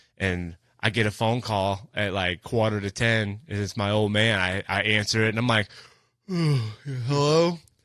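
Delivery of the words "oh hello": put-on sleepy voice, higher pitch. Retelling answering a late call from the speaker's old man, faking a sleepy voice. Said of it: "Just trying to be like, oh, yeah, I'm asleep".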